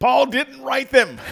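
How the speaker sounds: shrill, very loud, high-pitched full-volume yell. Explaining why some letters don't count, yelling. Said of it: "there it goes again".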